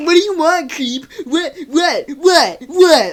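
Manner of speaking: flustered, freaked-out, panicky outburst. Describing a girl who messes with the speaker, then freaks out: imitating a freaked-out girl. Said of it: "She gets all freaked out".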